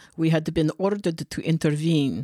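put-on Transylvanian vampire accent. Reading a story aloud to the others, the speaker narrates in a Transylvanian vampire accent. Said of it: "You sounded like a vampire".

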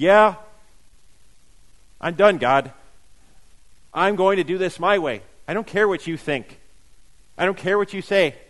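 mock-defiant, acted defiance. Speaker acts out the sinful nature talking back to God: acting out defiance toward God. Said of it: "defiantly telling God".

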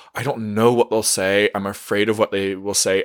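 plain

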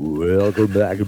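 imitated low voice. Doing the podcast intro the way Chris does it: imitating Chris's low voice. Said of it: "I can't do his voice that low".

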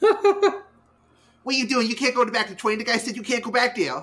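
exaggerated, very annoying, high, swooping voice. Mocking a guy's annoying voice to a co-host, Mandark voice turned up. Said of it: "that was a perfect impersonation".

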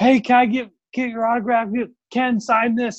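mock shrill screaming, very high pitch. Retelling a fan demanding an autograph, imitating someone screaming and yelling. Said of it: "screaming and yelling like".

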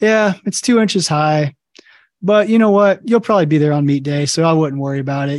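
obviously joking quip with heavy, dry sarcasm. A coach retells what they tell a lifter who squats high: retelling sarcastic coaching. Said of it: "I like to say that as a coach very sarcastically".

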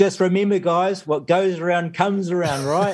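mock high, hollered shout. Retelling how Dennis called out to the crew as he tacked: retelling a shout. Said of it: "he shouts out".

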